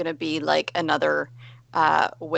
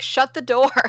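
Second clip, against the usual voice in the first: high-pitched, loud shouting yell; 8 semitones higher than usual. Yelling in character to an ally to close the door: yelling to an ally. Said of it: "I'm just gonna yell to Asturias".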